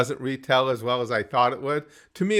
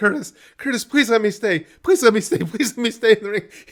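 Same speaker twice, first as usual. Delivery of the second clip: acted, high, near-tearful pleading, repeated; 8 semitones higher, 5 dB louder than usual. Retelling an opponent begging in his ear, imitating near-crying begging. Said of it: "He's almost crying".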